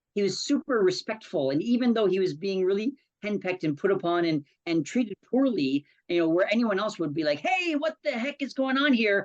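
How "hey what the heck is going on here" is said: fed-up, indignant, angry, pitched-up voice. Imitating how anyone else would react to being treated poorly: an angry protest. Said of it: "and would get angry".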